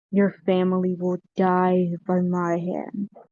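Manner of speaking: deep, slow, echoing warlock-type voice. Narrating a scene where a voice echoes around the players, deep echoing voice. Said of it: "you hear a deep voice sort of echo around you".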